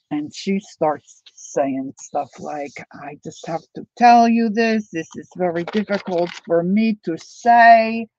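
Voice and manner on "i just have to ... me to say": thick put-on Spanish accent. Quoting a woman the speaker is telling a story about: thick spanish accent. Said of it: "she's got this thick Spanish accent".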